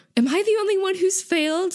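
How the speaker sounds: distressed outcry, pitched very high. Recounting a game, acting out Jin yelling after failing again: retelling Jin's upset yell. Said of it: "Jin again yells out".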